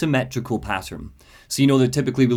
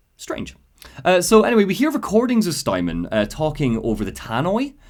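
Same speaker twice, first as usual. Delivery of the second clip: plain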